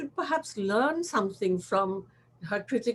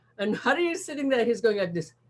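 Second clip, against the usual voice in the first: ordinary talk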